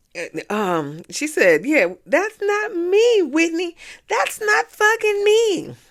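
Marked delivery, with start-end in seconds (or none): 1.6-5.6 mock very high, shrieking screaming outburst. Retelling an argument where Lisa screamed: imitating someone screaming. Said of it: "Lisa was screaming".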